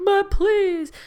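very high, loud, pleading voice, crying through tears. Retelling a woman pleading to keep her mangoes, acting out her tearful plea. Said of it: "And she is crying".

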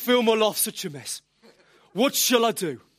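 put-on Brummie accent throughout. Speaker quotes Dave pouring his heart out while playing golf, in Dave's Birmingham accent. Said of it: "He speaks a bit like this".

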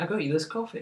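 high-pitched, salesy advert-style pitch delivery. Describing an actress advertising products within a film, imitating a salesy advert voice. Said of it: "advertising this stuff as well".

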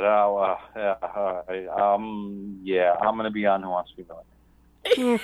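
mock halting, stumbling, heavily sarcastic delivery. Retelling answering a student's question: imitating own sarcastic reply. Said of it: "the most sarcastic way possible".

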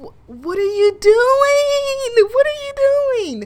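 high, loud, slow crying wail. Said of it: "she's crying".

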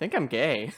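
ordinary delivery

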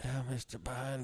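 quiet, flat villain voice. Mocking an actor cast as the next Bond villain, doing a Rami Malek impression. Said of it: "he's gonna be the bad guy in the next Bond movie".

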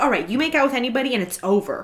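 put-on irritated young female voice, Brooklyn accent. Retelling what a man's ex-girlfriend said when he drunkenly called her, Brooklyn girl accent. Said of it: "she sounds like a Brooklyn girl".

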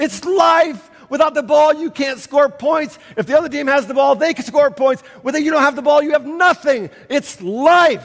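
fiery, high-pitched, loud shouting.

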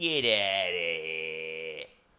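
tough mobster wise-guy voice, drawn out. Echoing the other speaker's line back in a Sopranos wise guy voice. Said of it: "Is that your wise guy voice?".

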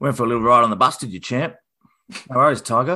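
patronizing, condescending, belittling tone. Suggesting how to mock someone by calling him champ, in a patronizing tone. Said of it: "really patronize the prick".

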